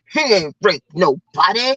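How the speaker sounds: low, slow, scolding grandma voice. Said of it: "she turned around in her grandma voice".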